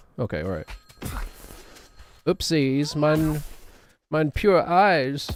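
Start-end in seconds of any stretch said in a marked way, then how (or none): 2.3-5.3 clumsy, badly done, put-on German accent. Joking about clicking weird links online: bad German accent. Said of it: "going German suddenly".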